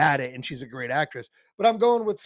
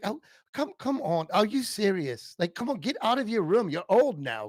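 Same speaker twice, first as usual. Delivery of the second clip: terrible, clumsy, put-on English accent; 6 semitones higher than usual. Imagining what Ricky Gervais would say, bad Ricky Gervais impression. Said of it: "That was a terrible English accent I just did".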